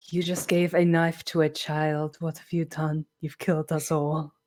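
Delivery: very low, hushed half-whisper, close to the listener. In a role-play, voicing a character speaking to the player; half-whispering in your ear. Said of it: "she just whispers in your ear".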